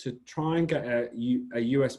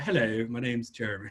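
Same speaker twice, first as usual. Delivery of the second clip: hammed-up, exaggerated posh British accent. Showing how they ham up their accent for americans: hammed-up posh british accent. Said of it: "really Cockney or really posh".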